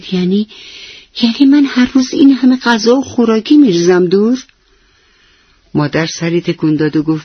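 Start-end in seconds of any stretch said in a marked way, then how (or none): 0.1-4.4 sheepish, embarrassed, shamefaced, pitched up. Soheil asks his mother a question, embarrassed. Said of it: "سهیل با خجالت پرسید".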